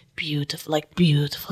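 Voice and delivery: mock mutter under breath. Retelling what a man said as the speaker walked past: retelling a mutter under breath. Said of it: "like under his breath".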